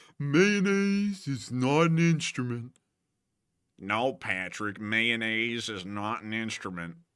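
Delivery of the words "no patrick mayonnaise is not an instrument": botched cartoon voice, softly. Quoting a cartoon line, in a SpongeBob impression. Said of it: "Or whatever SpongeBob does".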